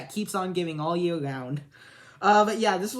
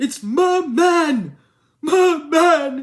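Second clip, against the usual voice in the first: very high, very loud, very slow, drawn-out voice; 10 semitones higher, 9 dB louder than usual. Going through favorite movies, quoting a favorite line in the Zoolander movie voice. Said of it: "but I can do the voice all right".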